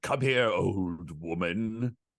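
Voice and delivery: eerie, looming, slow, drawn-out spooky villain voice. Describing a character on screen who sounds like him, Christopher Lee spooky voice. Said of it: "like this is my spooky voice".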